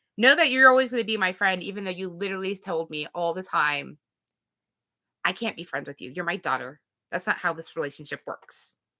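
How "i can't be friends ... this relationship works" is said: mock nasty, mean put-on voice. Quoting what a parent always said, in a mean voice. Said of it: "that was kind of a mean voice I put on".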